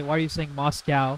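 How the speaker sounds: plain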